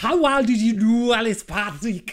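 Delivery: put-on Glaswegian accent. Retelling how a film's cop speaks: imitating a Glaswegian accent. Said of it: "she's Glaswegian".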